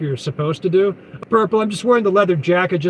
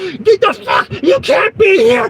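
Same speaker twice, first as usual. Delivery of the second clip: put-on very high-pitched, enraged, furious screaming; 13 semitones higher, 6 dB louder than usual. Recounting a man yelling at the speaker while unloading a truck, imitating an angry yell.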